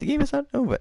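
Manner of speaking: very high squirrely voice. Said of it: "Okay, Squirrely".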